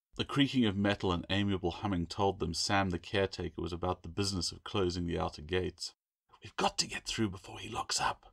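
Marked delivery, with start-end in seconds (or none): 6.4-8.2 urgent, pressing whisper. Claire, needing to get through before the caretaker locks the school gates, urgent whisper. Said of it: "Claire whispered urgently".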